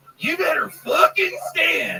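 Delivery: very high, squeaky put-on voice. Acting out William Montgomery telling Alex Jones he can't come in: William Montgomery impression. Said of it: "do William Montgomery? ... Telling Alex Jones that he can't come in".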